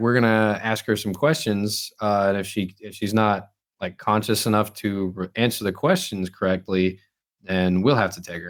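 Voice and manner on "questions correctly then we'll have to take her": normal talking voice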